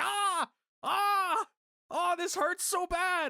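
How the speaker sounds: put-on very slow, high, stretched-out yell. Mocking a camera shot of Becky Lynch under a boot: imitating Becky Lynch yelling. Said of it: "she's just yelling outside of the cage".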